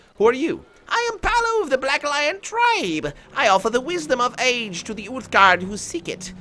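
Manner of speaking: put-on very high-pitched old woman voice. Voicing an old woman character's lines aloud, Palu old woman voice. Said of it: "So I could make this voice".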